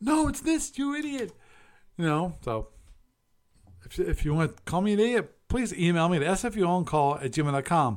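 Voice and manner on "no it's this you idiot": high-pitched mock scream, shrieked way up high. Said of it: "come screaming at me going".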